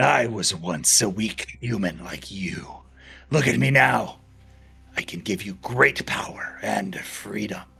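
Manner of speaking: growled, beastly wolf voice. Narrator voices a wolf speaking to the listener in a chamber, in a growling wolf voice. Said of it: "In a growling voice, the wolf says".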